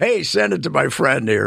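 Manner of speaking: plain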